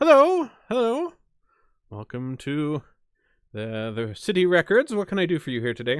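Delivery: sing-song elf voice. Voicing an elven gentleman at a records desk greeting visitors: elven gentleman voice. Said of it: "he sees you approach here and says".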